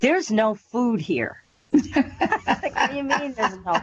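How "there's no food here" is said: put-on, very cranky, grumpy complaining tone. Retelling what a woman who suddenly appeared said: imitating a very cranky complaint. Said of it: "very, very cranky".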